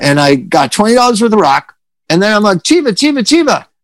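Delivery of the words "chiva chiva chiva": mock very high-pitched yelling call. Retelling calling out to buy drugs, re-enacting a yell. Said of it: "I'm yelling it".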